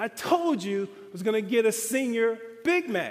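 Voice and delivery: put-on loud calling shout in a man's voice. Retelling how a customer shouted back across the restaurant: imitating a man shouting. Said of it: "at the top of his lungs, he shouts back to me".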